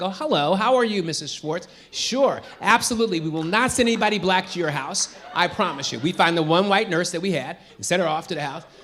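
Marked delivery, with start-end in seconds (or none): 0.1-6.0 code-switched, put-on phone voice. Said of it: "'cause I could change my voice".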